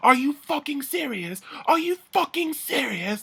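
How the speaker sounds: furious, disbelieving, pissed-off outburst, pitched way up. Retelling how angry housemates reacted to being splashed: imitating angry girls. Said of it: "Like, pissed".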